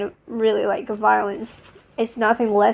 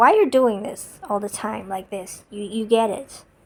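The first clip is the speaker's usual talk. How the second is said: put-on annoyed voice. Retelling how someone criticized them with a reverse question: imitating an annoyed question. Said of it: "questioning in a very annoyed way".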